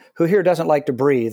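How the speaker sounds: normal talking voice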